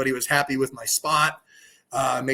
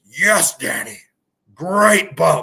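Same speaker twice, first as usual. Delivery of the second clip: very slow, loud, big voice drawing every word out; 3 semitones higher, 5 dB louder than usual. Retelling how Vince realized who took the bump and praised Danny, in a Vince McMahon voice. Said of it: "he did the Vince voice".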